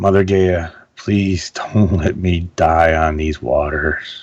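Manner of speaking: whispering softly. Playing a character kneeling to touch the earth, soft whisper. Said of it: "I'm just gonna whisper softly to myself".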